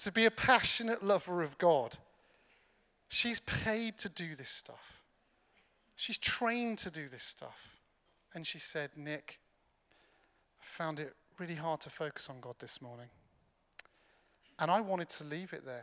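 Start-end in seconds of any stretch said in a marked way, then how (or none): 9.0-13.1 soft, low, sheepish tone. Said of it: "Ali sheepishly confessed something".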